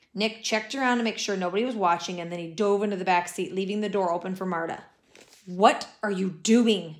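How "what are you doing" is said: worried, slow, anxious, insistent voice. Marta, looking over her shoulder as Nick dives into a car, demands anxiously. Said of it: "She demanded anxiously".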